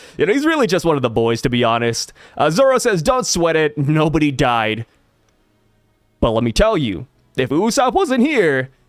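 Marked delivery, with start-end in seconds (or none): 7.4-8.7 voice breaking partway through. A viewer reading a character's line aloud, voice cracking. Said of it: "oh, voice crack".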